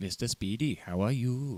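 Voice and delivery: put-on mixed Welsh and Indian accent. Greeting another speaker jokingly in a mixed Welsh and Indian accent. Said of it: "I don't know what accent that was".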